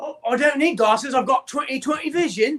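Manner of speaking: put-on British accent. Answering a friend's question about glasses, in a fake British accent.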